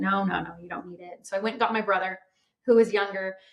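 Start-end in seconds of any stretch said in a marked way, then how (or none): 0.0-1.3 put-on soft, offhand, dismissive brush-off tone. Retelling how dad brushed off the kids begging for ice cream; mock-dismissive dad. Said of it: "he kind of was dismissing me".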